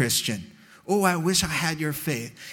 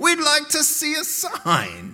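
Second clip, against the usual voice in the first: put-on British accent, very high pitched, swooping; 10 semitones higher, 3 dB louder than usual. Acting out people asking for a sign after the miracle, put-on british accent.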